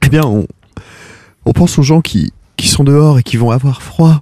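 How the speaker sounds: put-on tearful voice. In a two-person sketch, the speaker talks in a fake crying voice. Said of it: "Tu pleures vraiment là".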